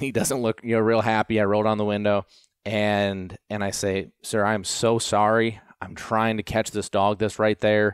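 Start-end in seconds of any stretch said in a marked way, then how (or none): 4.2-7.9 put-on apologetic, pleading tone. Retelling what they said to an airport worker: imitating own apologetic tone. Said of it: "very apologetic".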